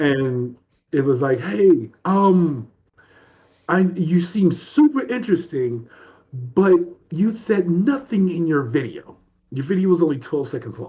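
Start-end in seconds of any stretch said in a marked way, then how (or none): 1.4-10.9 put-on English British accent. Retelling a phone call from TJ, imitating TJ's British accent. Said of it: "in a British accent, in an English accent".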